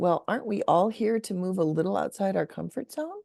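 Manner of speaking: put-on sugary, sweet Indiana Midwestern lilt. Speaker retelling what they told a reluctant man about joining the circle, sweet Hoosier voice. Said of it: "in my most sweet Hoosier Midwestern voice".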